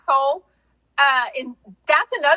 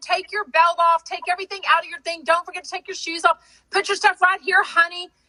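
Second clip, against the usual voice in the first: syrupy-sweet, sugary, overly nice voice; 4 semitones higher than usual. Act out the people who tell you the same instructions over and over, imitating an extremely nice person. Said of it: "the nicest people telling you over and over".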